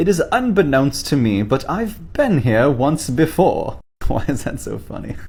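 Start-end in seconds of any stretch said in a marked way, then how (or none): 0.0-3.8 put-on high, slow English accent. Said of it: "I said in an English accent".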